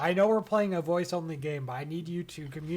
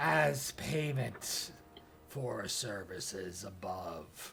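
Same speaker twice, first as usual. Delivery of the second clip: very low, rasping, slow voice; 8 semitones lower, 6 dB quieter than usual. Narrator voicing a figure holding a bag and wand, raspy voice. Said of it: "their raspy voice say".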